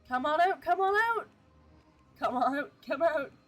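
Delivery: eager calling voice. Retrying a summons, the speaker calls the demon out, calling like they mean it. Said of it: "Say it like you actually want something to show up".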